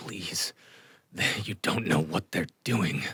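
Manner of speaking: trembling, shaky, pained, breathless voice. Game master voicing a frightened man with a blade at his throat, pained breath, shaking. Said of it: "in sort of pained breath, shaking".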